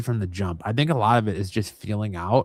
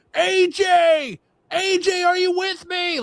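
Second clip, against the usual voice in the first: higher, louder scream; 5 dB louder than usual. Retelling how the ref reacted to a fading wrestler: imitating the ref screaming. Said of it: "the ref was sitting there screaming".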